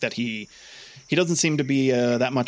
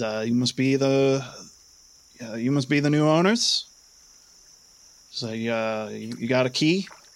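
put-on strong, thick French Canadian accent. Voicing a man who steps out of a boathouse, in a thick French Canadian accent. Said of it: "with a kind of thick French Canadian accent".

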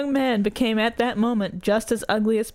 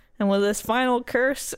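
ordinary delivery

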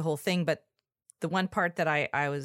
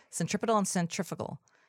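quick, rattled-off, fast delivery; 3 semitones higher than usual. Showing that this catchy pair of words must be said really fast. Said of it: "You have to say it really fast".

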